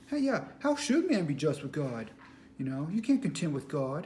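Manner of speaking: put-on talking-down, superior, patronizing reading. Imitating how readers will take a book at face value: mock-patronizing reading. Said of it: "they're going to read it like that, and it's going to be all patronizing".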